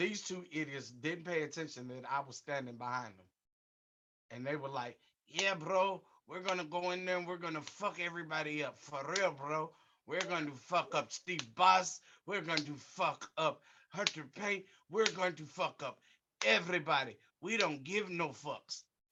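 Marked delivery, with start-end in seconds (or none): 5.3-18.8 put-on Middle Eastern accent in accented English. Retelling what two guys said lining up for a battle royal; Sheiky Baby accent. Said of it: "What exactly was that accent?".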